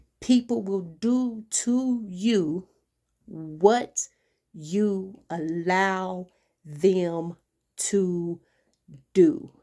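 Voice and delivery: slow-motion delivery, every word deliberately drawn out. Speaker stresses a lesson to listeners, said in slow motion. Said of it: "I had to say that in a slow motion".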